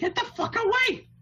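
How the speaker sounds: put-on shrill, girlish scream, very high. Voicing panicking slaves as the wheel spins: girlish scream. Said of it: "They scream in a girlish voice".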